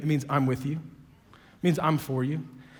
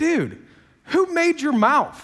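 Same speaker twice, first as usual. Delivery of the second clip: put-on slow, swooping, sarcastic deity voice; 12 semitones higher, 7 dB louder than usual. Retelling God's answer to Moses: sarcastic God with attitude. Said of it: "Sometimes I just think God has some attitude".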